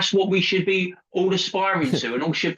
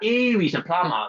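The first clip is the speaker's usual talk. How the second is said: mock catty, bitchy tone. Imitating a man who dismisses a plumber in the club: imitating a bitchy tone. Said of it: "he'll be really bitchy".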